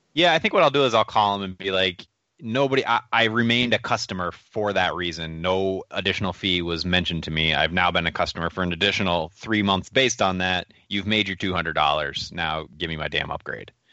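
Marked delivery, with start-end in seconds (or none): none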